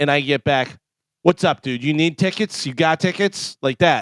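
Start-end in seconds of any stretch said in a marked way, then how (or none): 1.2-3.6 brusque, pushy, aggressive in-your-face delivery. Retelling how a text from Bobby read: imitating Bobby sounding aggressive. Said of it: "Oh, aggressive".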